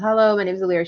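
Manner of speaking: feigned boredom, flat, disinterested, uninterested tone. Character introduces herself to guests at a party only out of obligation. acting bored and uninterested. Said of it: "I don't really care about what's going on".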